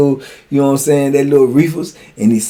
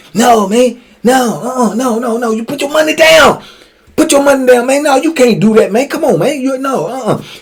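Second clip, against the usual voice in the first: hard-talking street gangster voice, pitched up; 10 semitones higher than usual. Retelling a little guy at a poker table, imitating gangster talk. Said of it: "He talking like a straight gangster".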